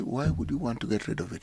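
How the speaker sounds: gentle, humble tone. Rephrasing a question so it isn't combative, the speaker asks in a humble inquiring tone. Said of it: "humbly, ... Have I changed my tone sufficiently to show that I'm just inquiring?".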